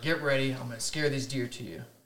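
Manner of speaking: ordinary talk, nothing marked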